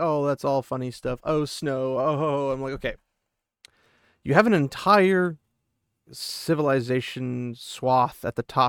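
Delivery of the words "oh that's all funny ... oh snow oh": ordinary talk, nothing marked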